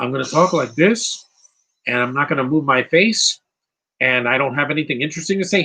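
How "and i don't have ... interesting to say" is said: normal talking voice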